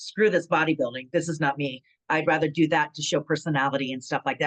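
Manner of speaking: ordinary delivery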